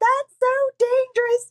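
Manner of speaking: high scream. Retelling being screamed at after coming off the track: imitating Timmy screaming. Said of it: "screaming at me".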